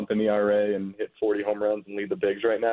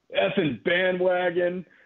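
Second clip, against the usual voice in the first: put-on drunken yelling, higher pitch; 9 semitones higher than usual. Retelling a drunk fan in a bathroom insulting him: imitating a drunk fan yelling. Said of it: "He yelled at me".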